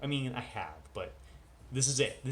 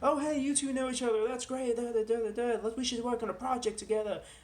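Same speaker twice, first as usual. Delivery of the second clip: clumsy put-on Australian accent, very high pitch; 13 semitones higher, 4 dB louder than usual. Recounting meeting two strangers at a short film event: really bad australian accent. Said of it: "I'm doing a really bad Australian accent".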